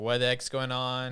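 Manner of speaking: normal talking voice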